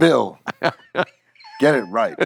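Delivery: put-on bossy, directing tone. Imitating her directing a speaker at work: imitating someone giving orders. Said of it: "she'd be, like, directing me to do something".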